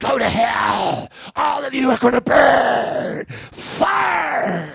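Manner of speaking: creaky, spooky, very slow menace. Showing the scary noises that someone didn't make, in a scary voice. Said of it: "you didn't make scary noises like".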